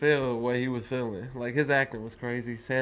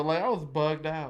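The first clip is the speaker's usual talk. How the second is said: ordinary talk, nothing marked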